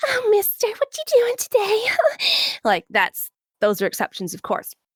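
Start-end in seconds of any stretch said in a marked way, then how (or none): 0.0-2.6 very high, airy, breathy anime voice. Explaining breath control, the speaker demos a breathy anime voice. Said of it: "the whole anime breathy thing".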